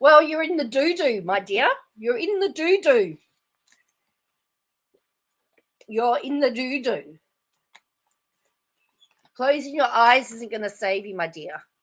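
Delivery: harsh, cutting tone. Commenting on a replayed clip of someone asked a question: harsh. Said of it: "I'm really being really harsh here".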